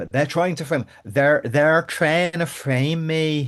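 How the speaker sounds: put-on loud, protesting tone in Northern Irish accent. Talking to the group about the vote, speaker does a Rachel impression. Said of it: "This is my best impersonation of Rachel".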